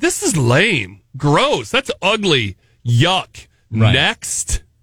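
put-on blunt, no-filter kid voice. Acting out a kid rejecting gifts with no filter, imitating a blunt kid. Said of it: "So a kid would just be like".

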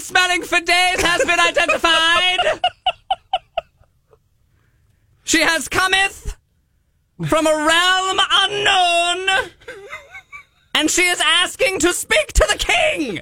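crier announcement voice. Performer announcing a new arrival to the audience, in a weird town crier voice. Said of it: "your weird crier voice".

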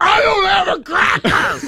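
put-on scream, yelped out way up high. Retelling losing patience with a child in a store: imitating a scream. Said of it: "I just screamed at the top of my lungs".

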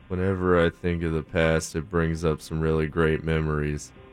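drawn out, completely flat, level pitch. Guessing a quiz quote's author, answering as Steven Wright: Steven Wright impression. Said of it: "Was that your Stephen Wright impression?".

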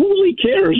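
fake careless tone, pitched high.

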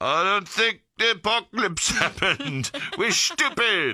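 put-on accent from the Netherlands. Retelling what one of them said after walking back from the bar: Netherlands accent. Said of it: "With a Netherlands accent".

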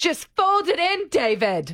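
very high, swooping impression voice. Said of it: "now I'll do Moira".

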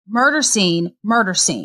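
ordinary talk

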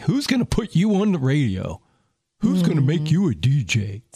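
derisive, scornful, mocking taunting tone. Retelling what an uncle told them about pursuing a dream, imitating his mocking tone. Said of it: "he said it with like a real mocking tone".

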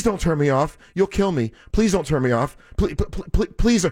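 put-on robot voice, pleading. Retelling a robot's words from a study with 89 people, imitating a robot begging. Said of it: "the robot was begging".

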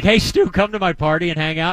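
plain

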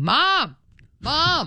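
put-on high yelling. Retelling a guy bursting through the door at a strip club, retelling a guy yelling. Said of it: "a guy bursts through the door and starts yelling".

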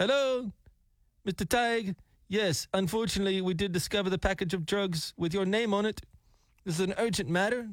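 put-on foreign, non-American accent. Retelling a scam phone call, imitating caller's non-american accent. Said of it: "he doesn't have an Americanized accent".

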